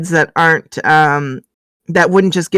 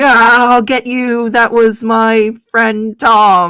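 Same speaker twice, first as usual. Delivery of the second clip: very drawn-out, slow, pitched-up in-character cry; 5 semitones higher than usual. Voicing a guard striking at her, shouting in character. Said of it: "he's shouting".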